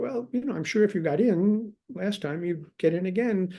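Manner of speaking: very sweet, high voice.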